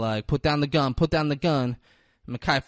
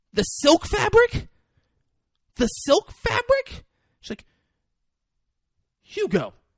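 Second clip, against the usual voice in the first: put-on panicked outburst, higher; 4 dB louder than usual. Retelling a film scene, quoting Emily: imitating someone freaking out. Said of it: "Emily starts freaking out".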